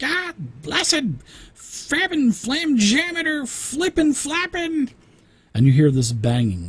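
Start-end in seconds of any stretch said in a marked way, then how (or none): 0.0-4.9 very high, shrill, squeaky, squealy little voice. Game master voices an unseen figure heard amid clanking, in a very high, squealy voice. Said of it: "a very high, squealy voice saying".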